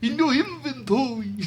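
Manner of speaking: New York accent, vampire voice. Asked what that voice is, the speaker repeats the line: new york vampire voice. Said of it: "a New York vampire".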